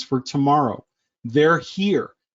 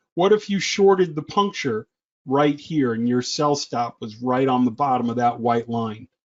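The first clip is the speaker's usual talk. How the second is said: ordinary talk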